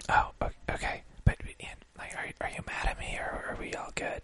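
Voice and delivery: soft unvoiced whisper.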